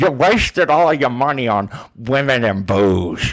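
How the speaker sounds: relaxed drawn-out delivery. Retelling a movie scene with a rich golfer: imitating Jonah Hill's cool-sounding voice. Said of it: "it's so fucking cool sounding".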